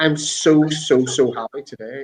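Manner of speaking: put-on crying, tearful voice. Retelling what a crying woman said after a speech: imitating someone crying. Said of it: "And she started crying".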